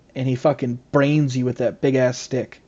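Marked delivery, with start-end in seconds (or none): none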